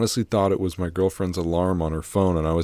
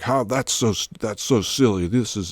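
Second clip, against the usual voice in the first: agitated, freaked-out, upset man complaining; 4 semitones higher than usual. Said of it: "trying to complain to me".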